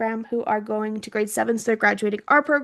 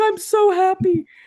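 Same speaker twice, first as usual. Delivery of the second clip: put-on teary, relieved, high, happy voice; 9 semitones higher, 3 dB louder than usual. Retelling a parent's reply to good news by email: imitating someone crying. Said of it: "His mom's crying".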